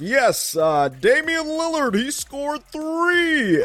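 very high, slow, drawn-out game-announcer voice. Recalling how they did their live show, in the announcer podcast voice. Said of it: "I started to do it in the announcer podcast voice".

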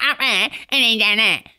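acted-out delivery. Repeating an old saying as once said it: impression of own past delivery. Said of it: "Why are you doing an impression of yourself?".

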